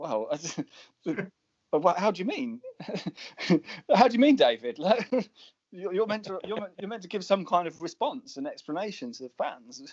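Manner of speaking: high-pitched, rattled-off, exasperated delivery.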